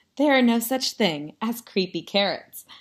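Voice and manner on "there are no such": plain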